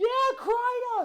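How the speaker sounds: put-on high, loud yell in a New York accent.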